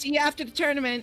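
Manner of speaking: high, called-out shout. Shouting a farewell in character after announcing a shout: shouting. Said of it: "And I'm gonna shout".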